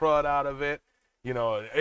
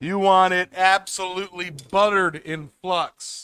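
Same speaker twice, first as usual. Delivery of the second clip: high, loud shout; 5 semitones higher, 7 dB louder than usual. Speaker explaining how much flux to use, mic on; shouting. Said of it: "I don't know why I'm shouting".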